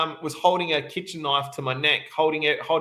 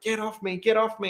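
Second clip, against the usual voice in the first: high crying scream, kept from being loud; 6 semitones higher than usual. Retelling screaming at a man to get off during an attack: retelling a scream. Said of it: "I'm screaming like".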